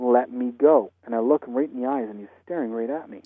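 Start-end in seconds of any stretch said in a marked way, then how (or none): 0.0-0.9 loud, raised, insistent, acted-out delivery. Retelling hearing a dead man speak to them: imitating a loud voice. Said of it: "I hear really loud".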